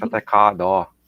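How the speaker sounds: Boston-style pronunciation. Complaining about boston speech and demonstrating it, in a boston accent. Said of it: "Boston with the daw and the car".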